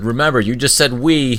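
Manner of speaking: slow, loud call, yelled out. A character walking away from the others yells back over her shoulder. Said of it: "she just yells over her shoulder".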